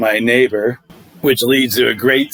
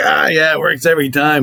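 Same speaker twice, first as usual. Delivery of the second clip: put-on Boston accent, high; 5 semitones higher than usual. Retelling what the neighbor said when they met: put-on Boston accent. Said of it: "He's got this Boston ac-, accent that's great".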